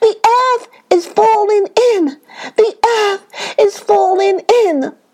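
high, terrified crying out. Fleeing animals answer a deer's question, crying out in terror. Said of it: "they cried in terror".

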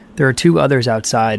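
ordinary delivery

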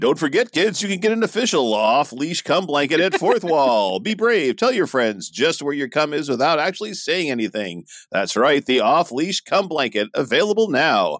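high-pitched ad-read commercial announcer delivery. The speaker pitches a product to the audience, in an announcer voice. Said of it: "I had to get my announcer voice on".

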